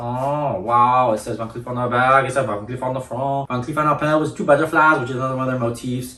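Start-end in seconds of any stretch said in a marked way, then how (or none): 1.1-3.5 put-on French-accented reading. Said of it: "I'm gonna do all my French accent stuff".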